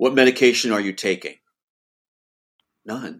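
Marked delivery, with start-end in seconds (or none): 0.0-1.4 cold, put-on broken English speech. Retelling a man questioning him about medication, imitating cold broken English. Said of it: "Very cold".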